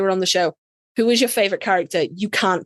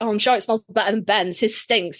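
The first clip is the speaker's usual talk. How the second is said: ordinary talk, nothing marked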